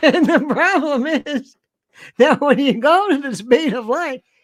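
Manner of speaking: talking through forced chuckle. Imitating Michio Kaku talking with a fake laugh: Michio Kaku fake laugh. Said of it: "Have you seen the fake laugh?".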